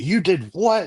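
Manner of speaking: put-on shrill scream, very high. Retelling a phone call where mom was screaming: imitating mom screaming. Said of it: "screaming at me".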